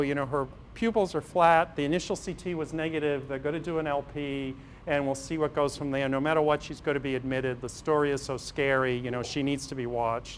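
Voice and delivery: ordinary talk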